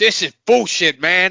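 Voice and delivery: bad fake New York accent, high and slow. Acting out someone coming out of the curtain, terrible New York accent. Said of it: "That was a terrible New York accent".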